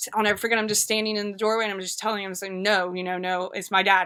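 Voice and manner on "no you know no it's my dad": usual speaking voice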